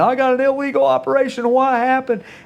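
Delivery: put-on frightened, high, freaked-out yell. Retelling calling out to the wife about an error message: imitating his own past yell. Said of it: "I yelled in".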